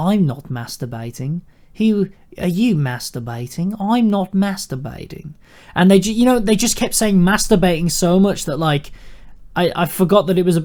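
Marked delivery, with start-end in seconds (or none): 0.0-5.3 put-on Australian accent in sketch-comedy style. Retelling an Auntie Donna sketch: imitating an Auntie Donna Australian accent. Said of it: "they keep saying in their Australian".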